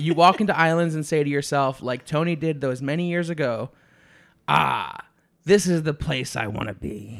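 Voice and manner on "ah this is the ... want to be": put-on salty pirate-style accent. Retelling what Tony said walking into Islands, in a pirate accent. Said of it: "That pirate accent".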